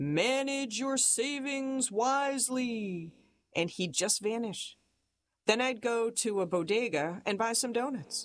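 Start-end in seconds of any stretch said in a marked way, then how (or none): 0.0-3.1 cryptic, mysterious put-on voice. Retelling what a strange man lurking by the comedy club would say, imitating a mysterious voice. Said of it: "he'd say in this mysterious voice".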